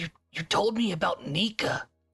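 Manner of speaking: whispering. Retelling what you said to someone, whispering. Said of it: "I like whisper".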